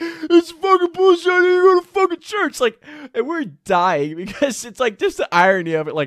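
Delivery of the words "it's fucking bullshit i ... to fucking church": shrill, very high, loud screaming. Retelling a man pinned in a headlock in the front yard, imitating him screaming. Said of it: "he's just screaming".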